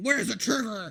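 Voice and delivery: loud, exaggerated gravelly growl. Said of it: "deep and gravelly without being".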